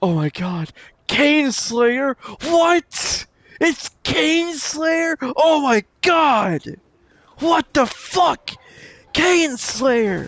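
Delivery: acted, high, shrill, rising starstruck squealing freakout. Imagining a follower who is a huge fan, the speaker acts him out: imitating a fan freaking out. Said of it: "he's probably freaking the fuck out".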